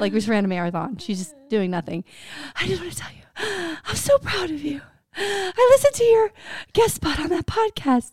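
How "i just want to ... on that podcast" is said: play-acted breathless, winded voice, high-pitched. Retelling a phone call from the speaker's mom, imitating out-of-breath mom. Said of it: "She's always out of breath".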